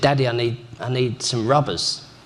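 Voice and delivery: plain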